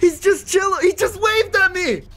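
high, loud, excited freaked-out shout. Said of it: "Bro, I'm freaking out".

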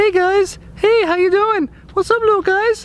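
very high-pitched puppy-talk voice. Speaker shows how they talk to their dogs, in a puppy-talk voice. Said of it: "my voice goes from like right here to like".

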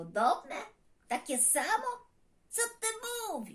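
high, surprised, baffled, astonished tone. Narrator voices a red dinosaur reacting to another's words, surprised. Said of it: "Zdziwił się czerwony dinozaur".

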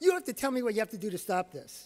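very stern, firm, no-nonsense insistence. Recounting work with a 14-year-old, the speaker repeats what he told her: retelling a very stern voice. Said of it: "I said in a very stern voice".

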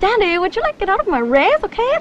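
bad, awful put-on valley girl accent. Mocking the accent a woman tries to do, in a really bad valley girl accent. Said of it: "it's just like a valley girl".

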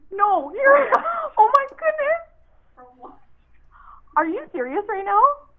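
freaking out completely, words breaking off. Renee is told on a call that her 50-50 ticket just won; freaking out. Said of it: "I am freaking out".

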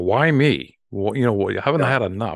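acted-out yelling. Retelling cursing at God at a stop sign: retelling own yell at God. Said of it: "I'm yelling, like, at God".

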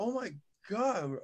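acted out high, shocked scream of disbelief. Recalling hearing that they were both going, retelling a shocked scream. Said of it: "We were like screaming".

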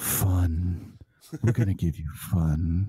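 very slow, sultry, seductive delivery. Joking about a favorite video, imitating Sean Tracy whispering. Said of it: "he whispers in my ear and he says".

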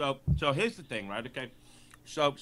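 talking with a mouthful of food. Told to continue, starting a point while talking with mouth full. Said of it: "sorry, I got a mouthful of pretzel".

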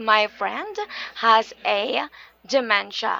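ordinary talk

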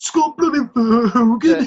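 put-on Birmingham accent. Repeating the player's name again on purpose: put-on Birmingham accent. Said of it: "I almost sound like a Birmingham".

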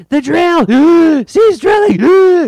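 put-on high, loud gasping wheeze, slow shrill words. Speaker imitates how he delivers every line in this episode, imitating gasping Major Blood voice. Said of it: "he's going full on Major Blood and he's gasping between lines".

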